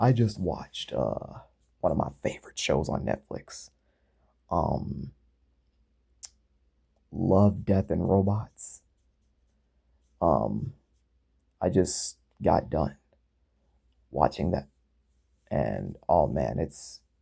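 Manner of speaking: speaking softly. Talking quietly so as not to wake a sleeping mom: talking quietly. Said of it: "I'm talking a little bit quiet here".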